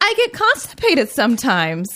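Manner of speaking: breezy and lighthearted. Retelling a line said by a woman in a commercial: imitating a lighthearted tone. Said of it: "in the most lighthearted tone possible".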